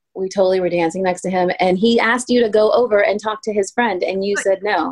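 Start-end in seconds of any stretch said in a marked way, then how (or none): none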